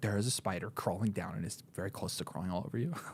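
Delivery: grave, completely earnest, low delivery. Retelling another speaker's warning about a spider, imitating someone speaking very seriously. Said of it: "you said that with such, like, seriousness".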